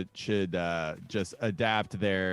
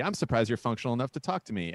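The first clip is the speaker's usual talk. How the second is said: normal talking voice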